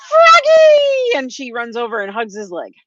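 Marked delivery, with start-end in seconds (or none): 0.1-1.1 very high, loud shriek. Voicing Brandy running to hug a returning friend: screaming. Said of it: "Brandy screams".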